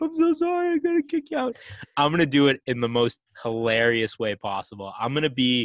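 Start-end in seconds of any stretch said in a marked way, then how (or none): 0.0-1.6 very high, tearful, weepy crying voice. Retelling the race director's apology for kicking someone out: imitating someone weeping. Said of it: "He was, like, weeping".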